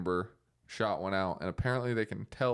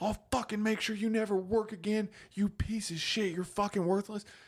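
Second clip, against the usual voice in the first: play-acted very high, vicious, furious berating yell; 12 semitones higher than usual. Retelling a news anchor tearing into his producer: imitating an angry tirade. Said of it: "He ripped into this guy".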